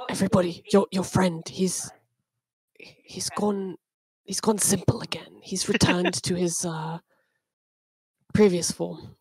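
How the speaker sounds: speaking in a whisper. Playing Roman passing on news over telepathy: whispering. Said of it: "he whispers".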